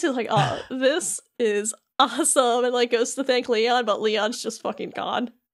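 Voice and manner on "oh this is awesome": ordinary talk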